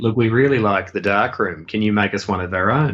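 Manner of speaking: ordinary delivery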